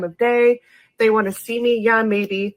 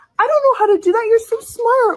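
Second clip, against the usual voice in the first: exaggerated girly gushing, higher; 14 semitones higher, 4 dB louder than usual. Showing how to praise a partner who fixed the bike: overly gushing. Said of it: "just overly, like, compliment".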